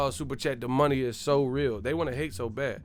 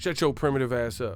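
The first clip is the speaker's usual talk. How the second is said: ordinary delivery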